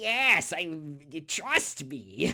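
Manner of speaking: very slow, drawn-out sinister evil wizard voice. Retelling a game scene where the wizard forces a boss fight: evil wizard voice. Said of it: "that is an excellent evil wizard voice".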